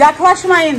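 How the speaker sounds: sharp, loud calling voice.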